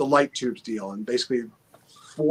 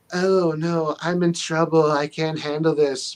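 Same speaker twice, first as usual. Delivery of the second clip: slow, dragged-out bikini-model style voice; 4 semitones higher than usual. Mocking how women wrestlers were once portrayed: Sable impression. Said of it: "my best Sable impression".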